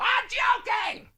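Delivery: shrill, very high voice. Doing an impersonation of Dan during the show: Dan impersonation. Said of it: "I gotta do this too".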